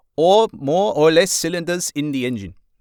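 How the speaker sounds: loud, high, put-on German accent. Imitating a journalist asking a long press conference question: put-on German accent. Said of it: ""Why on earth has he just done a German accent?"".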